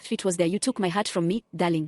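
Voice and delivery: normal talking voice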